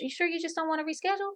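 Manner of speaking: easygoing soft voice. Showing a non-confrontational way to address something: gentle, non-confrontational tone. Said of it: "a non-confrontational way of me addressing it is like".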